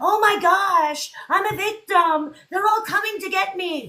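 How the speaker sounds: mock, very high, half-botched frightened victim voice. Acting out a famous person who tells everyone where they are, use a bad put-on victim voice. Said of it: "I can't even do that freaking voice".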